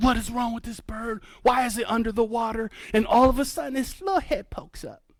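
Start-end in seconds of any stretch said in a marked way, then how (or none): 0.0-2.7 reenacted panic, much quieter. Retelling watching an osprey go under the water, retelling own panicked freak-out. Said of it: "And I'm freaking out".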